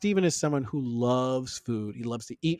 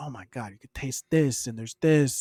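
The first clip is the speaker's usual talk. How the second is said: mock giddy excited voice. Describing a guy tasting food, imitating his giddy excitement. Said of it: "He's very giddy".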